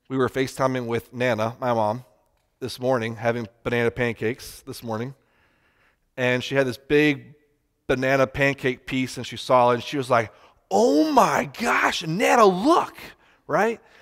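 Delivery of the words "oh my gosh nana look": acted awestruck wonder, very high, very slow, drawn-out. Retelling the daughter seeing a banana pancake piece: imitating Emmy's amazement. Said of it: "she says it like she just saw the most amazing thing".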